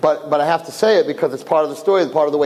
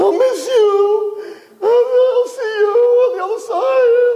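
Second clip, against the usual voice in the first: very high, very slow wail, stretching "you"; 3 dB louder than usual. Telling a story, acting out what the brother screams: retelling a scream. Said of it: "his brother's screaming".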